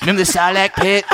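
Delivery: put-on high-pitched, bratty cartoon kid voice. Riffing on member berries with another speaker, in a Cartman voice. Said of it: "Why am I doing it in the Cartman voice?".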